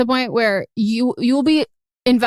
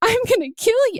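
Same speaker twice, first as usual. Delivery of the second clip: mock very high, tearful sob; 11 semitones higher than usual. Retelling being startled at the window after a shower: retelling own sobbing threat. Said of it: "And I'm sobbing".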